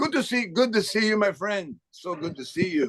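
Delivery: put-on Caribbean-accented speech. Retelling how he greeted a man just for fun, in a caribbean accent. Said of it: "I went into a Caribbean accent".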